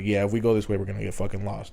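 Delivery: ordinary delivery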